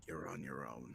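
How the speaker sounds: very quiet, very low, hushed secretive half-whisper. Player has their character privately message another character, half-whispering. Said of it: "I message Roger and whisper".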